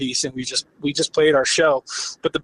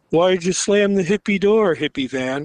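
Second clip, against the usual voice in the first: put-on boozy, very wasted-sounding drunken voice; 3 semitones higher than usual. Retelling what the drunk man shouted after the door slammed: imitating a drunk man. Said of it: "he was really wasted".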